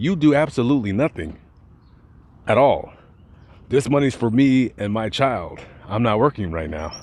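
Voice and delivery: normal talking voice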